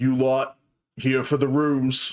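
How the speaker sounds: male orc character voice. Voicing an orc man who looks the adventurers up and down: voicing an orc man. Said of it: "an orc man kind of pushes through".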